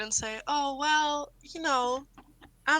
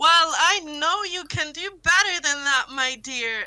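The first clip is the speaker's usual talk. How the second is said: shouting, projected far; 3 semitones higher, 6 dB louder than usual. Yelling over to an ally in character: yelling across. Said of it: "I'm going to yell over to [name]".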